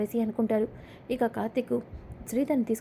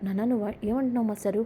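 plain

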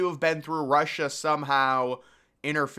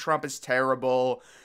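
ordinary talk

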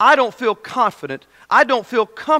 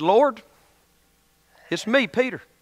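acted rural country accent; 3 dB quieter than usual. Speaker imagines the disciples praying, in a little country accent. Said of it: "spoke with a little country accent and said".

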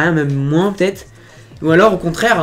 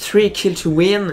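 put-on English accent; 3 semitones higher than usual. Reading out the topic from the title: English accent. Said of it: "magnifique accent anglais".

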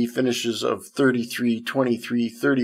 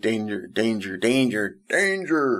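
slow, drawn-out, deliberate robot voice. Agreeing with the other speaker, then imitating the Lost in Space robot. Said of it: "the Lost in Space robot".

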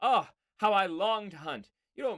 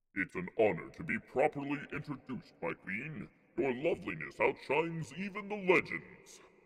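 deep-voiced put-on character voice. Voicing the king's huntsman as he addresses the queen, deep character voice. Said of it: "This guy's got a deep voice. We're gonna get into character".

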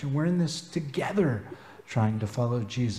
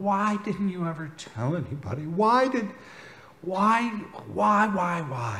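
put-on, high, demanding, repeated mild half-yell; 6 semitones higher than usual. Retelling a night drive with a dying friend: retelling own yell. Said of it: "I just started yelling".

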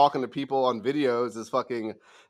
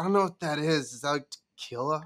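imitated drunken slurred speech, higher; 3 semitones higher than usual. Retelling what a drunk woman at a bar asked: imitating drunken slurred speech. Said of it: "talking like this, like, slurring her words a bit".

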